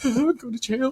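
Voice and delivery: acted, high-pitched, blubbering through tears. Retelling the end of a movie where Superman cries: imitating Superman crying. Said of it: "He's, like, crying. He's, like, tearing".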